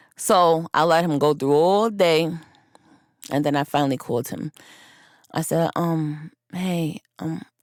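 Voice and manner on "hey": fake sleepy, drowsy put-on voice. Retelling finally calling him back, speaking in a fake sleepy voice. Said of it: "in a fake sleepy voice".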